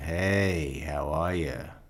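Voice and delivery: very slow, low, eerie creepy voice. Imitating someone's usual opening greeting: imitating Charlie's creepy greeting. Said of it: "very creepily, the way he says it".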